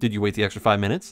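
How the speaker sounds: low, quick, completely earnest, dead-serious deadpan delivery. Retelling an exchange, the speaker quotes the man's reply: imitating a dead serious tone. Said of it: "Like dead serious".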